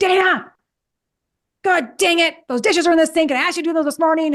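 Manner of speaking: hot-tempered scolding, high. Acting out an example of coming home after traffic to Dana, pretend aggressive scolding. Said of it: "and real aggressive of me".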